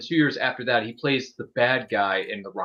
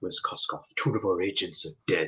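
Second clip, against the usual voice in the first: low, gritty, deadly serious delivery; 5 semitones lower, 4 dB quieter than usual. Quoting Bond from the film while watching: gritty serious Bond impression. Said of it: "he's just gritty".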